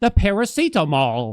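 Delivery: exasperated. Retelling a customer repeating her request: imitating a frustrated british customer. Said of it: "she very quickly got frustrated with me".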